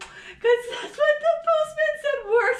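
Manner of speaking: put-on childlike little voice.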